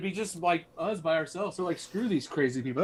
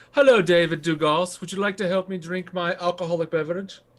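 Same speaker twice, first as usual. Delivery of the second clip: put-on posh, fancy voice. Greeting a viewer with the pinky finger up: put-on fancy voice. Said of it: "With the pinky finger up".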